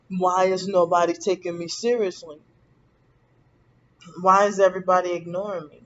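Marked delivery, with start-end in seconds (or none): none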